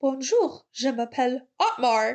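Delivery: acted French, slowed down. Act out Otmar driving into the Alpine factory, imitating Otmar practicing his French. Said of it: "practicing his French".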